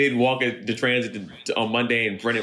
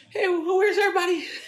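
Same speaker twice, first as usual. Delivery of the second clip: very high, squeaky put-on voice. Imitating a friend walking into transit on Monday: imitating Brennan's voice. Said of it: "that depiction of my voice".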